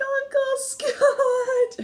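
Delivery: mock frightened girl's voice, very high. Retelling a movie scene where Lucy calls her uncle: imitating a scared girl. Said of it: "getting all scared".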